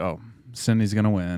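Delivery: normal talking voice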